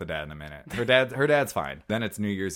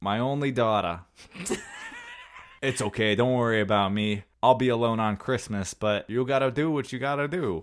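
put-on swooping New York–New Jersey accent; 4 semitones higher than usual. Quoting a movie character's lines in a stereotypical new york, new jersey accent. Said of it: "stereotypical, like, New York, New Jersey accent that's like".

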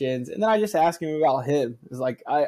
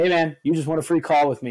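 put-on casual, relaxed way of talking; 3 dB louder than usual. Retelling a message from Newsom, imitating Newsom's way of talking. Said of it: "that's exactly how he talks".

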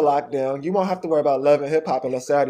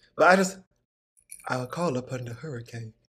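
put-on Southern accent, lower and quieter; 3 semitones lower, 7 dB quieter than usual. Joking about how Storm's voice sounds, doing Storm voice with southern accent. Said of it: "And with the southern accent".

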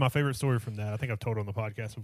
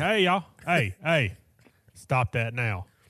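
put-on, mock drunk manner of talking; 2 semitones higher, 5 dB louder than usual. Describing how they talk when drunk, imitating their own drunk self. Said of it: "When I get drunk, I'm like".

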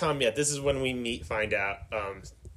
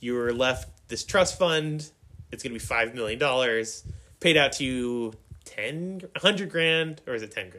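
plain

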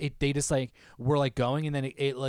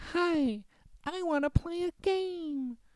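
very high, robotic, synthetic computer voice. Speaker describing a video quotes its greeting, in a high-pitched ai voice. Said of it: "A really like high pitched AI voice".

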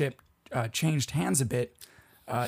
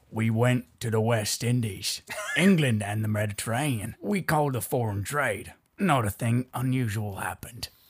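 put-on Australian pirate-style voice and accent; 3 semitones lower than usual. Quoting an Amazon crew member from the story, in an Australian pirate accent. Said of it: "your Australian pirate thing".

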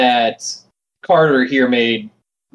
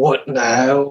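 quiet mutter under the breath. A man interrupted by a commotion outside a secret room, muttering under his breath. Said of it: "He's just going to mutter under his breath".

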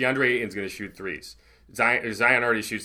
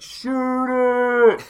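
put-on crowd-like yelling, higher and louder; 7 dB louder than usual. Retelling how fans at the game yelled at a player: imitating yelling fans. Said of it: "were just yelling".

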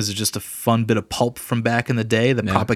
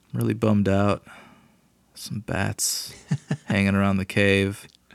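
put-on sad superhero voice, quieter; 3 semitones lower, 5 dB quieter than usual. Joking about a new film's Batman as very sad: mock-sad Batman voice. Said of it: "his Batman is he's very sad".

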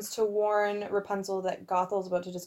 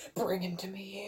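really creepy, sinister, unsettling villain voice; 6 dB quieter than usual. Retelling a character's line from a movie scene: imitating a really creepy line. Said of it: "in this really, really creepy way".

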